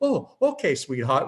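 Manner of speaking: put-on Italian accent in an old grandmother's voice. Speaker retelling grandmother's reply to them, in her italian accent. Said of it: "with her Italian accent".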